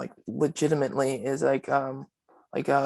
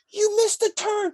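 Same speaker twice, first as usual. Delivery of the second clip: put-on scream, higher; 3 dB louder than usual. Retelling how she screamed over a missed turn: imitating someone screaming. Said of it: "She starts screaming at me".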